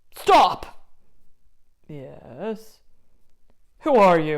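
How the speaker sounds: menacing troll voice. Stopping someone and demanding who they are, menacing troll.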